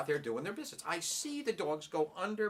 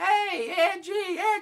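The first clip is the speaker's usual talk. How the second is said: teasing yell, very loud and very high-pitched; 10 dB louder than usual. Retelling teasing the dogs from outside the house: imitating own yelling. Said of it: "I'm yelling".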